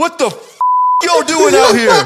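shrill, very high, menacing, threatening scream. Retelling a stranger leaning out a car window: imitating a menacing scream. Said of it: "he just had just death in his voice".

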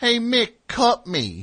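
Philly accent, very high, slow and drawn out. Imagining how Rocky should have sounded, doing Rocky with a Philly accent. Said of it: "he should have had like a Philly accent".

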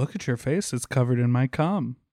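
ordinary delivery

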